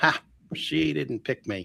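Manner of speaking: put-on, slow speech through chuckling laughter. Retelling how he reacted during a long medium show: retelling own laughing remark. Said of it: "I'm looking at my watch and I'm laughing".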